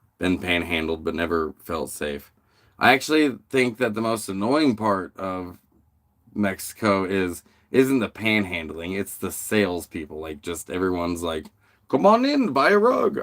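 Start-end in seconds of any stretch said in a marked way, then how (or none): 11.9-13.2 put-on accent from the Middle East. Imitating salespeople in Mexico who call everyone in, Middle Eastern accent. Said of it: "I don't know why they have a Middle Eastern accent".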